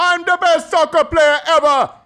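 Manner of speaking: very high, self-satisfied, cocky bragging tone. Acting out a muscular man bragging about himself: imitating a boastful muscular man. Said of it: "He's like".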